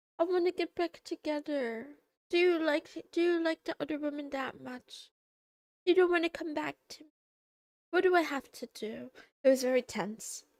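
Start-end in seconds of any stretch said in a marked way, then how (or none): 0.2-9.1 put-on high voice, about to break into crying. Retelling what a woman on the couch said to him, imitating someone about to cry. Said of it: "she's like about to cry".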